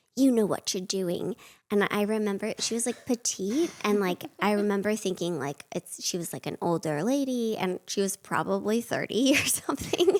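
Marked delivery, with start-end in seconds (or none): 0.2-1.4 put-on, imitated stern British accent. Retelling a woman's reply at the door, stern British accent. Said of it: "she had like a very stern British accent".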